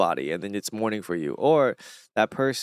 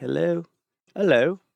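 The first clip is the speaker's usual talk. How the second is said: put-on English accent on hello, pitched up; 7 semitones higher than usual. Explaining that people in England talk differently, British accent. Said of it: "in England they they they, they talk hella different".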